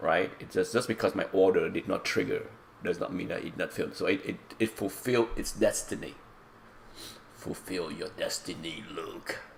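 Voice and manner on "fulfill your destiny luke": hushed, soft, slow voice. The speaker, with an allergy voice, quotes a line: Emperor impression. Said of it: "I got the allergy voice".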